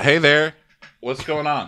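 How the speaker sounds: casual bro voice. Greeting a delivery person who has arrived: bro voice. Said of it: "Ronnie gets bro voice for the delivery people".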